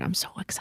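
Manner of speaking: hushed, soft, breathy whisper, barely voiced. Retelling her last words before she passed, imitating a whisper. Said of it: "and she whispered".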